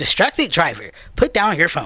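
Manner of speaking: automated in-car voice-assistant voice. Describing how a car camera catches texting drivers, doing the Siri voice. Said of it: "the little Siri voice will be like".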